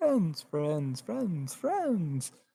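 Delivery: chorus of tiny, swooping little voices. Game master voicing what players hear in their minds, tiny quiet voices. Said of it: "tiny voices".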